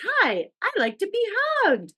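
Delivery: high, swoopy, sing-song, toy-sweet doll voice. Retelling a movie scene where a doll speaks: Chucky doll voice. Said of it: "in his, like, doll voice".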